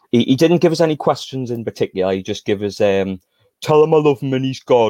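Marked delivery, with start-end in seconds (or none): 2.7-4.9 put-on, drawn-out, drunken Geordie accent. Passing on a message from a man in the bar, in a put-on drunken geordie accent. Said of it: "in the best drunken Geordie accent I can come up with".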